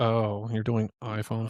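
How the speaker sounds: put-on, mocking condescending tone. Retelling how a man spoke about their iPhone photography: mocking a condescending tone. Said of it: "that was kind of condescending".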